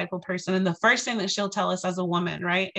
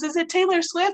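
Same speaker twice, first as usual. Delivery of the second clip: put-on little kid voice, much higher pitch; 10 semitones higher, 4 dB louder than usual. Retelling what a five-year-old girl asked before meeting someone, in a little five-year-old voice. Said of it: "like in her little five-year-old voice".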